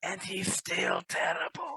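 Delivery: loud, high-pitched stage whisper. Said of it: "I whisper to Arnold".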